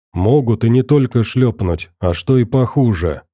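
plain

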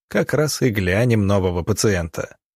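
usual speaking voice

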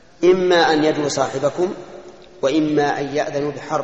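ordinary delivery

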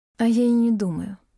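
quiet, soft voice. Narrator reads her reply to his contemptuous remark, answering quietly. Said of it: "Отвечаю тихо".

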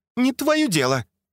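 sharp snapping tone, pitched very high. Already at the door, she answers Andrei's question, snapping back. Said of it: "огрызнулась она уже с порога".

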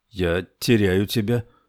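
ordinary delivery

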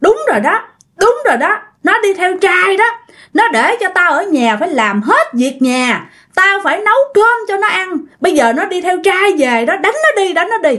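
goading tone, cranked way up high.

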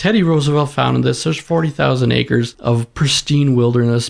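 ordinary talk

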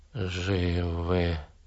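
whispering. Answering the narrator's question, whispered. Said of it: "ответили они шепотом".

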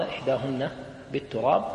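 plain

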